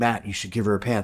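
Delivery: ordinary talk, nothing marked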